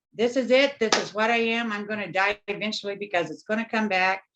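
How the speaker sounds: ordinary delivery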